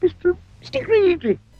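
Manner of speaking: tiny, terrified squeak, pitched very high. A narrator reads a frightened man squeaking his name to a giant. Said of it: "could only just manage to squeak his name out".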